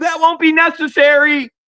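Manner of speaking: put-on very high, kid-like, childish shout. Retelling a message left for the magistrate: imitating a childish shout. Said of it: "Literally shouting out like a child".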